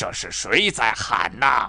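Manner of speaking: harsh, cutting, sharp, stern delivery. Reading a story, the angry old man demands who is shouting, sharply. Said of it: "厉声说".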